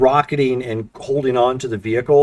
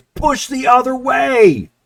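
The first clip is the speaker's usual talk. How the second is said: very high, urgent yell; 12 semitones higher, 4 dB louder than usual. In a story told to players, a woman points at the listener, yelling. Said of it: "she points to you again and yells".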